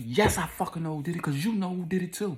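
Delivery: put-on yelling at a very high pitch. Retelling a woman's angry reply to an officer: imitating someone yelling. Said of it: "And she yelled".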